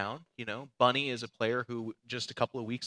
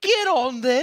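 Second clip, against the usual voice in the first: very loud, very high-pitched shout; 14 semitones higher, 11 dB louder than usual. Retelling meeting a bus driver while lost in london: imitating a london bus driver. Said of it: "he's like".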